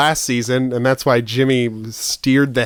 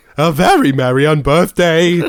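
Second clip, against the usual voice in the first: very goofy, silly put-on character voice; 4 semitones higher, 5 dB louder than usual. Two friends recall a favorite voice to do: very goofy voice. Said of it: "the very goofy voice".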